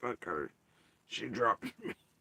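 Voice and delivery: angry, mad, swooping put-on pet voice. Voicing the thoughts of a pet that left after being dropped: voicing a pet as mad. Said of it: "He is so mad".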